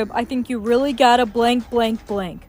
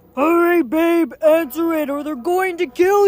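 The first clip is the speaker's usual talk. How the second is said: urgent shouting, higher; 5 semitones higher than usual. Urging another player to answer the lyric before being killed: yelling urgently. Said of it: "Stop yelling at me".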